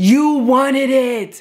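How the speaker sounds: put-on high-pitched screaming. Recounting a drunk father yelling at his girlfriend, the speaker is imitating dad screaming. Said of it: "my dad is literally screaming at her".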